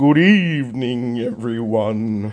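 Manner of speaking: creepy, eerie gothic voice. Greeting viewers at the start of a recorded video in a creepy gothic voice. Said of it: "there's my creepy gothic voice".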